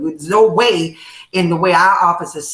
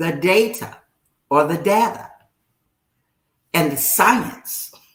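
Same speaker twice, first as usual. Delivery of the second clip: slowed-down, slower pace. Repeating a phrase after the other speaker asks for it: said slower. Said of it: "say it slower".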